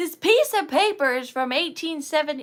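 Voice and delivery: thrilled, excited yelling out of sheer excitement. Talking about an old piece of paper, the speaker gets carried away: excited yelling. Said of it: "I'm done yelling".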